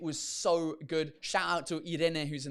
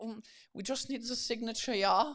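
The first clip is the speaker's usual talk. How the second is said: fairly thick put-on German accent at a raised pitch; 6 semitones higher than usual. Retelling what the hotel check-in guy said, German accent. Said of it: "inserts a German accent".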